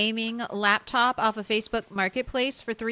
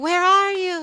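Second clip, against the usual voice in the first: loud, high, calling-out scream; 8 semitones higher, 7 dB louder than usual. Describing people who keep screaming for them, retelling a scream. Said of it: "screaming at".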